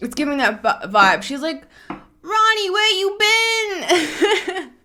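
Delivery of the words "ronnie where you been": put-on very high, very slow, drawn-out New Jersey accent. Retelling how a woman greets Ronnie, in a New Jersey accent. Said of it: "This is like a New Jersey accent".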